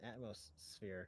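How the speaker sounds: slow, soft, drawn-out, atmospheric delivery.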